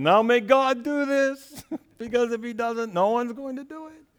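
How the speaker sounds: put-on English spoken with a Yiddish-inflected accent.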